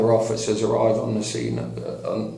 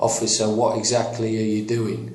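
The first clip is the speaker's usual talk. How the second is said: plain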